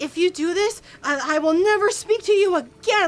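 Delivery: play-acted furious, high-pitched angry voice. Retelling what the speaker's mother said when defied, imitating a furious mom. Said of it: "she was furious".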